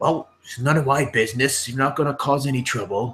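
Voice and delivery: put-on high-pitched, old gatekeeper voice. Voicing the stooped gatekeeper who strains up with his lantern: voicing the old stooped gatekeeper. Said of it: "and he's like".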